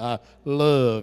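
very deep, low-pitched, drawn-out Southern drawl. Showing the audience how to say it to a neighbor, with a southern drawl. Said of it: "you got to put that southern drawl into it".

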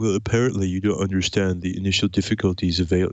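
nerdy, know-it-all voice. Responding to another's point, the speaker slips into a Comic Book Guy voice. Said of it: "put on my comic book guy voice".

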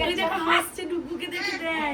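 plain

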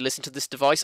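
normal talking voice

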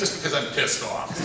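ordinary talk

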